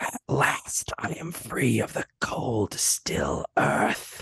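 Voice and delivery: slow, hushed, sultry whispering voice. Voicing a freed figure whose voice whispers from behind: whispering character voice. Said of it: "They speak in a voice that ... whispering into your ear".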